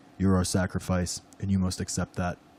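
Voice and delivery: very low, soft, looming beast voice. Narrating a story, voicing the creature that yells at Austin, deep creature voice. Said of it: "I was trying to do the deep voice".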